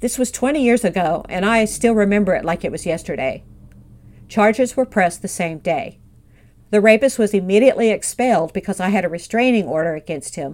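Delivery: normal talking voice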